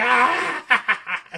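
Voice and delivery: mock very high, loud, shrieking laugh-scream. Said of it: "scream laughs at Hoff".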